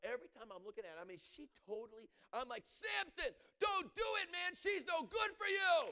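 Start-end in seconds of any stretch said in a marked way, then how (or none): 2.6-5.8 very high, shrill, loud screaming. Reading about Delilah, the speaker acts out calling a warning to Samson: retelling screaming at Samson. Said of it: "I'm screaming in my Bible".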